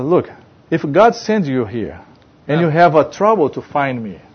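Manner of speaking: ordinary talk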